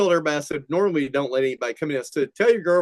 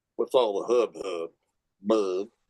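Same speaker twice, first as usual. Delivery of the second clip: low, slumped, drooping character voice; 6 semitones lower, 3 dB quieter than usual. Retelling the engineer's reply when greeted: Droopy voice. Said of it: "he did a good droopy".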